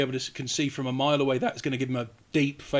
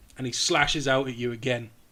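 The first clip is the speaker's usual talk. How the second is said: normal talking voice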